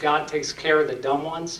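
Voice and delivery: ordinary talk, nothing marked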